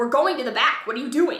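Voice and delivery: irritated, hurried, loud and quick angry voice. Retelling what she said to Brett while vlogging: retelling sounding angry. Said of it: "Like I sound angry".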